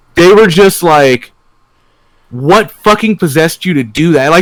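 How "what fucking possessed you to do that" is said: mock angry rant, growing angrier. Retelling how someone got angry about the shoes: imitating someone getting angrier. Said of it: "they were getting, like, progressively angry while they were saying it".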